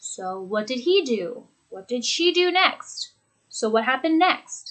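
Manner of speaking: tone sinks on each final next. Demonstrating example questions in a lesson, with falling intonation. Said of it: "With that falling intonation as well".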